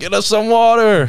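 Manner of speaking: very loud, very high, drawn-out hollering. Retelling how students called to the football players: imitating someone yelling. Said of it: "yelling at the football players".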